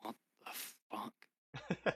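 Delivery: hushed, barely voiced, stunned under-breath whisper. Reacting in character in stunned silence: muttered under breath. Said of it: "just under my breath go".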